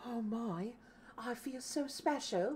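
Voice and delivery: small, soft, high little voice. Speaker reacts to receiving a gift from the Emperor, Tiny Tim impression. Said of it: "It's my Tiny Tim impression".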